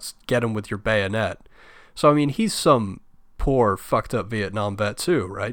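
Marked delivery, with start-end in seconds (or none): none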